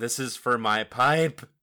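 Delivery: loud, shouted battle war cry. Narrating a player character's attack on the foe: yelling. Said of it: "just yelling".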